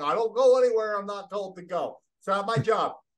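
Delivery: put-on stubborn horse voice, high and loud. Voicing a horse that refuses to move: voicing a stubborn horse. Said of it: "And the horse is like".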